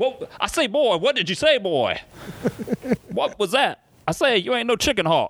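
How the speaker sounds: very high, blustery Southern cartoon rooster voice. Retelling a run-in with a man who walked away, doing the Foghorn Leghorn voice. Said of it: "I didn't know Foghorn Leghorn was the one".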